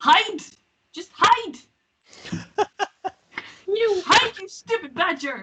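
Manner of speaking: scolding tone, pitched high. Yelling in character at a companion to hide: yelling at Jeremy. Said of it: "yelling at Jeremy again".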